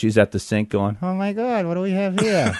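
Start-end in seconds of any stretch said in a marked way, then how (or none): 1.0-2.6 higher-pitched mutter through a barely-moving mouth. Retelling how a wife at the sink muttered: imitating muttering without moving lips. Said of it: "my wife turns into a ventriloquist".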